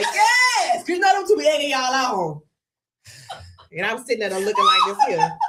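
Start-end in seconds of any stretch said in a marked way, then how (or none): 0.0-0.8 loud hollering. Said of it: "Danielle and Nika ain't holler".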